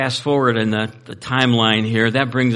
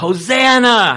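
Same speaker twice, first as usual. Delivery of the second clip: high, drawn-out yelling crowd cry. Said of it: "they're yelling".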